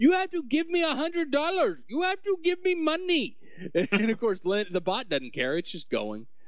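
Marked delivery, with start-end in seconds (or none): 0.0-3.4 mock frustrated screaming, much higher, slower. Describing a scammer yelling at a bot, imitating the scammer screaming. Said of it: "he just starts screaming".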